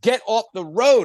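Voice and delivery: high-pitched, shouted, yelling voice. Retelling a cop blowing a whistle at a cyclist: imitating a cop yelling. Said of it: ""Why are you yelling?"".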